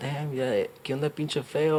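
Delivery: soft, rude, casual buddy mumble.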